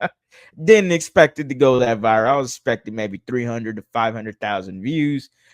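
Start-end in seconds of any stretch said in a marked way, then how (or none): 2.3-5.3 low, offhand nonchalance. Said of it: "I say that so nonchalantly".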